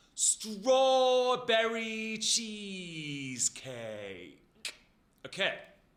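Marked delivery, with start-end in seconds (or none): 0.2-4.4 slow, over-enunciated, loud, swooping, every syllable drawn out. Showing a group a warm-up: exaggerating every syllable, said slowly. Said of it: "Try and say it nice and slowly and really draw it out".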